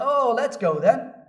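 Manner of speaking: cynical, sarcastic tone. Acting out Thomas speaking to his fellow disciples: imitating Thomas's sarcastic, cynical voice. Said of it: "you can hear the sarcasm and the cynicism in his voice".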